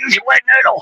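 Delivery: small hoarse voice, pitched very high. Quoting what he always used to say on the court: little hoarse voice. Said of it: "with that little hoarse hoarse voice".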